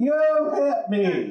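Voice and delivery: accusing tone, repeated, rising volume. Telling how a woman accused them after their bag tapped her: retelling a woman getting louder. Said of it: "her voice got louder".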